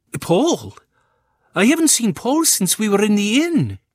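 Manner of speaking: very high, swooping, rising panicked voice. Mrs. Mackenzie answers Rosalind while they search for a missing child, panic rising in voice. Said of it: "hear the panic rising in Mrs. Mackenzie's voice".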